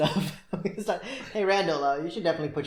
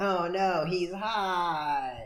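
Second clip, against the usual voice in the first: very slow drawl, the word hot dragged out. Imitating a cartoon character looking at someone: Squidward impression. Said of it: "That's my impression of Squidward".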